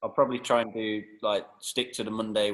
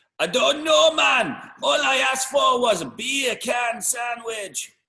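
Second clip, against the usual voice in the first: put-on Jamaican accent, very high, very loud, drawn out; 8 dB louder than usual. Retelling a man's answer about his beer can sandwich, imitating a Jamaican accent. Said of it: "I do a really good Jamaican".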